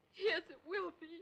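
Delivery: loud, high tearful speech through sobs. A bride being fitted for her wedding gown answers the question, crying while talking. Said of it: "Then why are you crying?".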